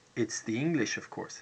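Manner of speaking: ordinary talk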